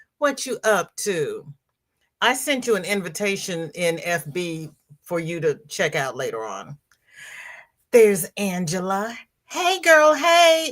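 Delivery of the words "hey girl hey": very high-pitched borrowed put-on voice. Greeting a viewer in the chat, doing a Sandrine impersonation. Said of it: "in my best, uh, Sandrine impersonation".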